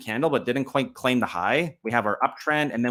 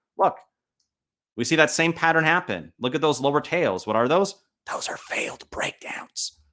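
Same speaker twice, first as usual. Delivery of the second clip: deliberate, hushed stage whisper; 3 semitones higher than usual. Walking viewers through a chart pattern, whispering on purpose. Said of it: "I know I'm whispering on purpose".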